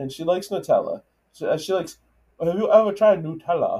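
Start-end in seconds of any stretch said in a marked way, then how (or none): 2.4-3.8 raised voice of a German woman. Imitating the interviewee who likes Nutella: imitating a German friend. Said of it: "That was a good impression of her".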